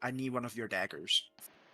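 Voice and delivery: soft, hushed, secretive half-whisper. Playing a character, quietly asking another character for something: half-whispering. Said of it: "I'd like to whisper to Sven".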